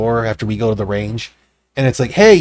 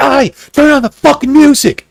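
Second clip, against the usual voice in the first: play-acted shrill, rowdy, aggressive, belligerent yell; 13 semitones higher, 7 dB louder than usual. Describing how they behaved toward others at the party, imitating belligerent partier. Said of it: "be belligerent at the other people".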